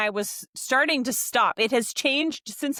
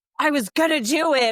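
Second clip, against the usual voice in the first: slow, put-on prickly, defensive tone; 4 semitones higher, 4 dB louder than usual. Retelling how he answers when given driving directions: mock-defensive reply. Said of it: "he's definitely defensive when he says it".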